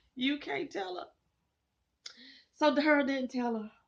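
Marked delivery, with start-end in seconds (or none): 0.2-1.1 choked-up voice catching with emotion. Talking about a scene that moved them, getting emotional. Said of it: "I'm about to get emotional again".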